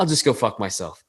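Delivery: low, soft mutter under the breath. Retelling a movie scene line: imitating a mutter under breath. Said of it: "he just goes under his breath".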